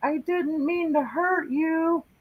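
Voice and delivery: very high, very slow, acted-out weeping voice. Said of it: "it sounded like an, a man crying".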